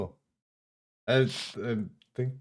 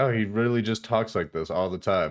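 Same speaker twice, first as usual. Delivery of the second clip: plain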